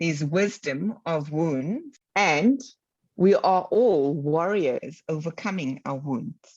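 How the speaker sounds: slow, measured delivery, each word given weight. Repeating a phrase so the listener can capture it, speaking slowly. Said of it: "I said that slowly".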